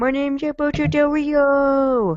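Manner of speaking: high, slow, stupid-sounding put-on voice.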